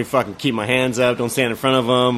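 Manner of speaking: plain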